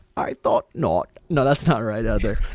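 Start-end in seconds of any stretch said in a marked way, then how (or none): 0.2-1.1 low, put-on movie villain voice. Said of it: "It went a little, like".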